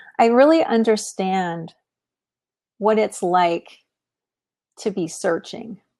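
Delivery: a little emotional, halting, phrases breaking up. Responding to listeners' comments, the speaker is getting a little emotional. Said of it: "I'm getting a little bit emotional".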